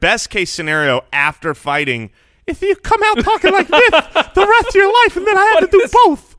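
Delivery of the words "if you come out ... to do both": very high, squeaky cartoon mouse voice. Joking about the results of fighting Mike Tyson: high-pitched Mike Tyson impression. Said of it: "That's more high pitched than I think he's ever been".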